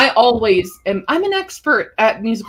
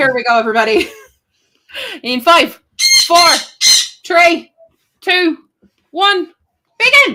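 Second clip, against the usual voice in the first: fake Irish accent, higher and louder; 9 semitones higher, 6 dB louder than usual. Starting a thirty-minute countdown for everybody in a put-on irish accent. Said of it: "I'm getting in the Irish accent now".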